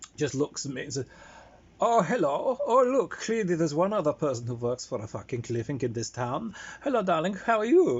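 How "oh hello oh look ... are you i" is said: put-on German accent. Retelling how Jonas greeted the speaker, in his Munich German accent. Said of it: "wonderful München German accent".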